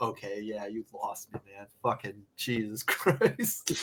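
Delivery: play-acted exasperated, fed-up tone, losing the thread, giving up. Retelling a teacher losing patience with an essay: imitating an exasperated teacher. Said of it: "They'd be like".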